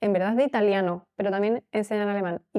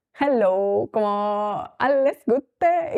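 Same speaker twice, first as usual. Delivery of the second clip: put-on thick Italian accent, dragged out very slowly; 4 dB louder than usual. Recalling a teacher who taught german, imitating him: heavy italian accent. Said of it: "con acento italiano heavy".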